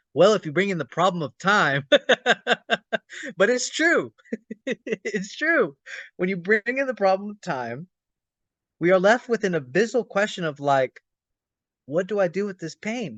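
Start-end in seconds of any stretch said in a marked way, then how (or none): 0.1-1.8 put-on mocking sarcasm, faster. Retelling how their partner quotes them back, retelling a sarcastic mocking quote. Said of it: "my partner even like sarcastically quotes me".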